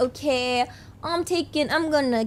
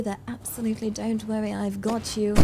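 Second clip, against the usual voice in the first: fake received pronunciation accent; 4 semitones lower, 6 dB quieter than usual. Offering a listener as much British accent as they fancy: BBC broadcasting voice. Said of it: "that wonderful sort of B B C broadcasting voice, the R P".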